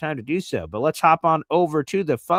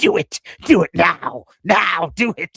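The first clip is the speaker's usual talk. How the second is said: loud, raised, sinister, evil villain voice with menace; 2 semitones higher, 6 dB louder than usual. Retelling the devil voice in his head while Easy talks, as a Star Wars Sith Lord. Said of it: "the devil voice was the evil Sith Lord from Star Wars going".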